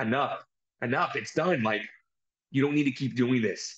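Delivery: put-on pleading voice. Retelling how Zayn begged for the beating to stop: imitating Zayn pleading. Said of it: "And he's pleading".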